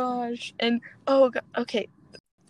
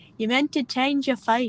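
put-on Scottish accent. Doing the one Merida line they can manage, with a lighter Scottish accent. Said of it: "That's the only line I can do".

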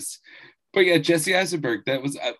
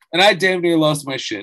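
usual speaking voice

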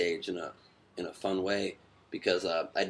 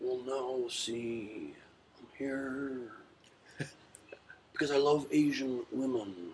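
high voice with see drawn out long; 5 semitones higher, 3 dB quieter than usual. Asked for an impression, playing a guest visiting Shanghai: Nicolas Cage voice. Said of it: "Nicolas Cage is here".

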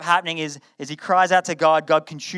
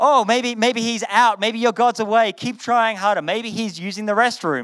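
sarcastic, jeering, mocking taunt, pitched up; 6 semitones higher than usual. Retelling a prophet taunting his opponents: imitating a mocking tone. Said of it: "he starts mocking".

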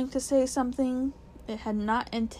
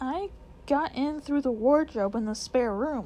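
ordinary delivery

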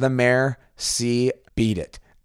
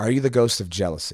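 normal talking voice

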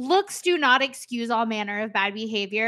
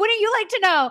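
imitated scream, higher pitch; 8 semitones higher than usual. Retelling screaming at the TV about a character: imitating own screaming at TV. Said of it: "I literally screamed at the T V".

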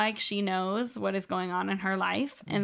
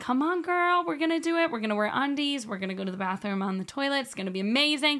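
put-on high, peppy rah-rah cheerleader voice; 5 semitones higher than usual. Retelling how she encouraged her toddler to use the toilet: imitating own cheerleader voice. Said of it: "do her cheerleader".

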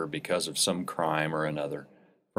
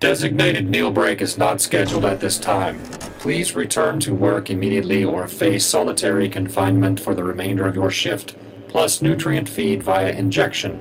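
inhumanly deep voice, lower than any human, louder; 3 semitones higher, 7 dB louder than usual. Narrator reading the deep voice ordering prisoner Roy back to work, inhumanly deep voice. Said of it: "came the deep voice that was lower than any human voice could manage".

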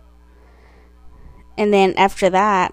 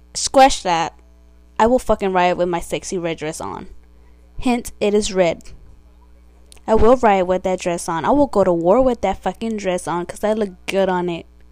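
normal talking voice

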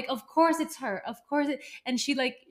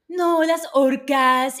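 loud nature documentary narrator voice; 7 dB louder than usual. Retelling how a woman talked to a guy in Spain, in Discovery Channel narrator voice. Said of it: "And like talking like that".

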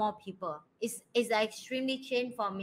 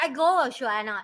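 plain

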